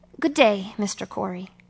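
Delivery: ordinary delivery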